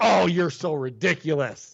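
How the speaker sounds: put-on offended tone. Mocking someone who is acting offended: imitating Jake Tapper acting offended. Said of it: "acting just like".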